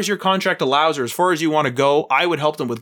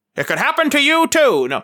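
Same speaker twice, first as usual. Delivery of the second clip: put-on old-time 1940s radio voice, much higher pitch; 12 semitones higher, 3 dB louder than usual. Speaker describing a scenario that could happen, in a 40s radio voice. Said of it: "Bit of 40s radio voice".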